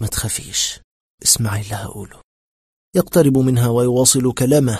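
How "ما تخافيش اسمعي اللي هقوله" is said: faint, hushed, breathy, barely voiced whisper. A man in a shaking lift keeps talking to the woman, faint whisper. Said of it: "فيواصل همسه الخافت".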